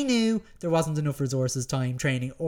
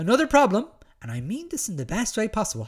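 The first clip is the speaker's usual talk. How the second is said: put-on voice, higher-pitched; 7 semitones higher than usual. Speaker reading out a quote from an article he once wrote, in quoting voice. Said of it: "I'll do it in my quoting voice".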